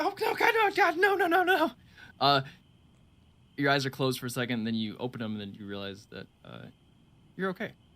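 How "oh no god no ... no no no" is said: very high-pitched, drawn-out terrified scream. Narrating a character dragged outside in fear: screaming in terror. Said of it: "start screaming".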